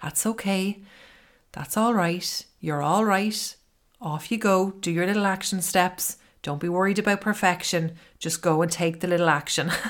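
soft, calm, gentle voice. Showing how to talk to yourself kindly: soft, calm voice. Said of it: "with a soft voice, with a calm voice".

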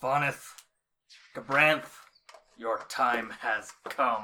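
words growled out in a wolf voice. Voicing a spirit wolf addressing two characters in a game, growling wolf voice. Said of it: "and he growls".

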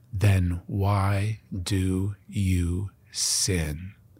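quiet, hushed, very slow, low, held-in delivery. Retelling a man's next question to the speaker, quiet and slow. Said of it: "his next words came quietly and slowly".

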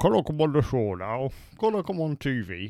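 slow, unhurried put-on northern English accent. Acting out a plea to be on a show: put-on northern english accent. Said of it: "makes you northern".

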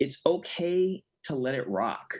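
ordinary talk

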